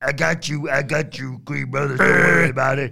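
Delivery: loud, high-pitched character voice, called out. Retelling a wrestling segment, imitating Stacks' voice. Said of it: "I thought you were gonna do the voice".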